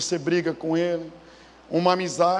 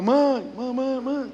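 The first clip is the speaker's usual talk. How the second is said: put-on girl voice calling out, pitched much higher; 7 semitones higher than usual. Retelling hearing a girl's voice echo across a valley, imitating a girl calling out. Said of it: "a voz ecoava".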